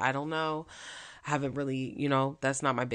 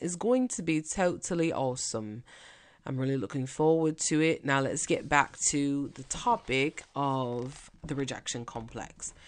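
fake, put-on British accent. Repeating a line about tomorrow's group call: put-on British accent. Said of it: "I'm gonna do my British accent".

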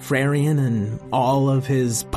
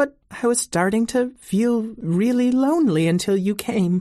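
put-on shy creature voice, much higher pitch; 9 semitones higher than usual. A shy pony-shaped rock introduces itself to Emma, in a shy pony-shaped rock voice. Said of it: "I happen to be a pony-shaped rock. ... I came to the forest because I'm a shy Unistony".

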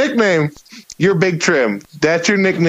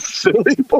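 imitated confused, questioning tone, higher pitch; 5 semitones higher than usual. Retelling a crowd's reply at a comedy set: imitating a confused, questioning crowd. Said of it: "very confused and just questioning why they're saying it".

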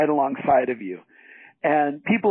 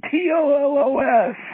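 put-on scream, much higher, louder; 12 semitones higher, 3 dB louder than usual. Retelling an interview where the man screams the spelling into the phone, retelling a scream. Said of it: "he just screams into the phone".

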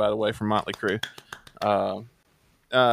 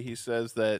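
normal talking voice

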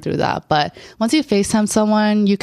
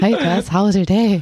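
put-on nervous voice, acted out. Retelling a guy's first FaceTime call with her: imitating a nervous guy. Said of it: "he's shitting his pants".

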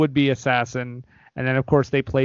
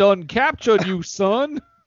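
pitched-up cartoon rooster voice; 5 semitones higher than usual. Riffing on a movie scene in a Foghorn Leghorn voice. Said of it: "Started doing foghorn leghorn".

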